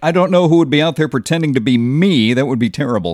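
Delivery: normal talking voice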